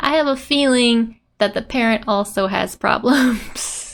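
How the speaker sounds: ordinary talk, nothing marked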